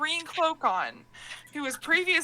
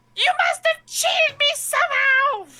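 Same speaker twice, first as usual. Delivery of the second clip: ridiculous squeaky shriek, very loud, furious; 13 semitones higher, 9 dB louder than usual. The narrator voices an enraged character: enraged, ridiculous squeaky high voice. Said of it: "He's got this really ridiculous squeaky high voice".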